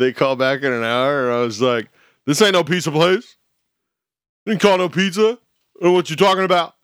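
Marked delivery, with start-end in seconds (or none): 2.3-6.7 pitched-up, would-be macho tough-guy voice. Retelling what was said to callers who rang back, in a tough guy macho voice. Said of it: "That's my macho voice. My tough guy macho voice".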